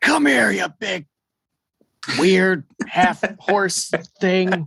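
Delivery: high, bellowed, challenging shout. A speaker voices a character challenging a half-horse creature, bellowing a challenge. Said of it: "he'll billow out a challenge to it".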